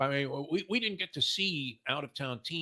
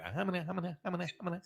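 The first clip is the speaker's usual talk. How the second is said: higher-pitched blustering voice. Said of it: "You go Ralph Kramden on that".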